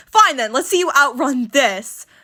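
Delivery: ordinary delivery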